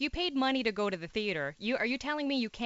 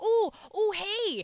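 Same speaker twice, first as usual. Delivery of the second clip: put-on, high-pitched, feigned surprise; 9 semitones higher, 4 dB louder than usual. Retelling how line cutters greet friends ahead: imitating a feigned surprised greeting. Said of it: "they pretend they don't see you standing".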